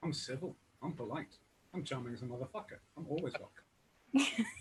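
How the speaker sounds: hushed, bone-dry deadpan, very quiet, barely audible. Answering whether they got thrown out of a work Zoom meeting, in really quiet deadpan. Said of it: "really quiet deadpan that far from the microphone".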